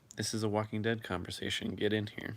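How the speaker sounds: ordinary delivery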